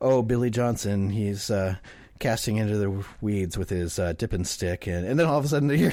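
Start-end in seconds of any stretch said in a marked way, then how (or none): 0.0-4.9 soft-spoken, hushed, slow golf-announcer voice. Imitating a fishing-show announcer who talks like golf commentary: quiet golf-announcer voice. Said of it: "they talk real quiet and they're like".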